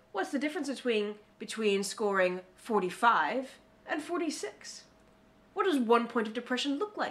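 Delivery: professor-like lecturing voice. Quoting a professor quizzing students about a depression scale, imitating a professor. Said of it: "This is my impersonation of this professor".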